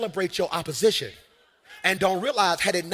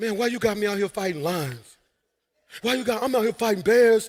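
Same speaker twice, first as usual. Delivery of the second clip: mock hard-done-by, aggrieved, angry griping rant; 2 semitones higher than usual. Speaker mimicking how the audience sounds right now; mock complaining. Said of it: "That's what you sound like".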